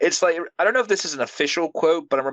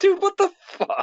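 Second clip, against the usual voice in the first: high, slow baffled outburst. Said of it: "I'd be like".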